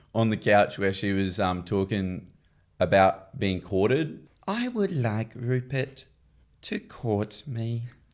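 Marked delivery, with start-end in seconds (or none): 4.5-7.9 clumsy, unconvincing attempt at a woman voice. Asked to do one, retelling Evelyn on the couch: bad Evelyn impression. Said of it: "That's bad".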